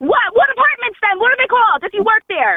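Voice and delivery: very high-pitched, furious, angry shouting. Demanding which apartments the caller works for: yelling angrily. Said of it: "Why are you yelling at me?".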